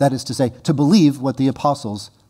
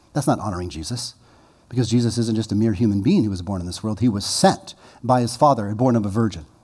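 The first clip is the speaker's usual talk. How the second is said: ordinary delivery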